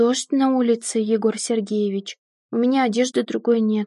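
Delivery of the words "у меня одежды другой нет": ordinary delivery, nothing marked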